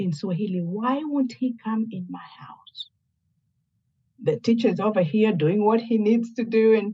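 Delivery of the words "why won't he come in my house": put-on muttering under the breath. Retelling what the student's mom said at the door: imitating someone muttering under her breath. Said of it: "I heard her say under her breath".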